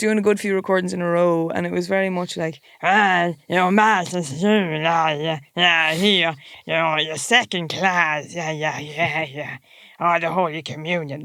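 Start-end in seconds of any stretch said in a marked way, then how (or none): 2.8-11.2 put-on creepy, low, slow elderly woman voice. Retelling practising a video as an old neighbour woman: old neighbour woman voice. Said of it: "That's you getting into character".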